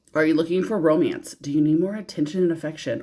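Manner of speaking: ordinary talk, nothing marked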